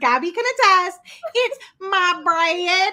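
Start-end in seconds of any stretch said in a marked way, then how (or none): 1.3-2.9 put-on broadest possible thick country accent. Telling how a companion on the trip answered about the wrapped thing, in [name]'s most country accent. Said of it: "in her most country accent ever".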